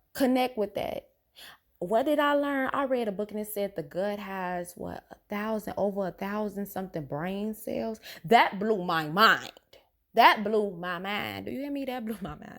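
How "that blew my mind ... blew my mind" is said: insistent, emphatic repetition, pressing hard. Speaker repeating a point right into a listener's ear: yelling. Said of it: "Sorry to yell in your ear".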